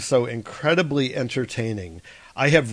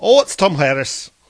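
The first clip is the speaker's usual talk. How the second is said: raised voice with a Scottish accent creeping in; 4 semitones higher, 7 dB louder than usual. Doing an accent bit while the other speaker says it's going Scottish again. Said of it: "you're going Scottish again".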